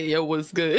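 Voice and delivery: put-on manly voice. Speaker says he talks this way when playing comp: put-on man voice. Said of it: "I tend to talk in my man voice".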